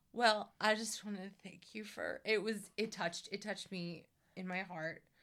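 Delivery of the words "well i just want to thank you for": mock teary, slurred voice holding back tears. Retelling a gracious thank-you speech: imitating someone holding back tears. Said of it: "he's trying not to cry so hard that, like, his words start to slur".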